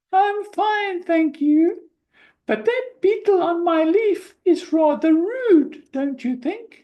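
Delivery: tiny, very high flower-voice squeak. Narrating a children's story, the daisy answers a greeting: tiny squeaky daisy voice. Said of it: "the daisy replied in a tiny, squeaky voice".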